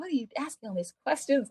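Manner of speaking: put-on exasperated, irritated tone. Retelling a scene where the characters get irritated with questions: imitating irritated parents. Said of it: "they start getting irritated".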